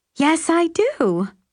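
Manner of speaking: very high, perky, chirpy voice. Narrator reads Carol answering a man's question, in a chirpy mouseketeer voice. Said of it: "she answers in a chirpy mouseketeer's voice".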